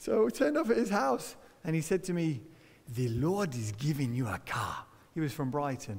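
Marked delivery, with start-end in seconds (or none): 2.9-4.8 slow, deep, put-on Nigerian accent. A speaker quotes a man from Nigeria who invited him round, put-on African accent. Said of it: "It's my African accent".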